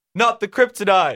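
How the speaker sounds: shouted put-on superhero voice. Retelling a friend's joke impression, shouting: shouted Batman impression. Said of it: "He shouted".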